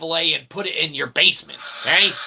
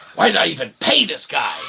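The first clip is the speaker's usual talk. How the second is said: put-on angry voice. Imagining the new boss's reaction to being contradicted: imitating a mad Elon Musk. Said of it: "he's gonna be so mad".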